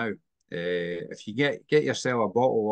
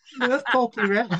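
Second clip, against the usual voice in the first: very bad Scouse accent, higher pitch; 13 semitones higher, 3 dB louder than usual. Quoting what a woman said about someone: bad Scouse accent. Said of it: "the worst Scouse accent I've ever heard".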